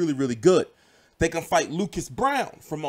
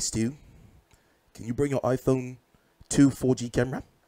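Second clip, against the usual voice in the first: put-on New Zealand accent, lower pitch; 4 semitones lower than usual. Imitating people at a boxing press conference: New Zealand accent. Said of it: "my New Zealand accent".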